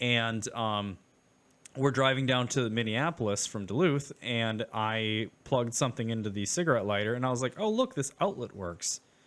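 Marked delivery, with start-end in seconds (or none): 7.6-9.0 real, unforced surprised tone. Retelling plugging something in on a drive to Minneapolis: retelling genuine surprise. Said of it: "Genuine surprise".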